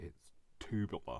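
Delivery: American-accented speech.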